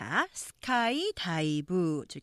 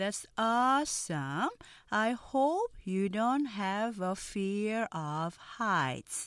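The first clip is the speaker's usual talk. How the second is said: very slow, careful, word-by-word reading aloud. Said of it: "느린 속도 발음 듣고 천천히 따라해".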